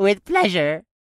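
high, loud cackle in a goblin voice. Narrating a goblin answering another goblin about the captured creature, cackling. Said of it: "the first goblin cackled".

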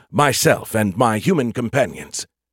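ordinary delivery

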